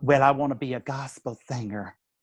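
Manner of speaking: put-on lovely, beautiful American Southern accent. Retelling a woman's answer about what she wants to be, in a Southern accent. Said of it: "she's got this beautiful Southern accent".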